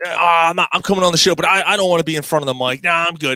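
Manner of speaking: reluctant, unwilling put-on character voice. Retelling how a guest said he didn't want the mic: imitating Dave. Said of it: "He never".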